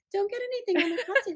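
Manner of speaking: sweet gentle tone. Retelling own reminder to carolers about costumes: sweetly telling. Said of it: "I'm just sweetly telling them".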